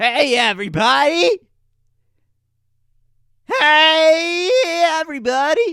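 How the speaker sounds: very high, very loud, big voice. Deciding to talk louder from now on and trying it out, much louder voice. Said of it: "Maybe I should just talk a bit louder from now on".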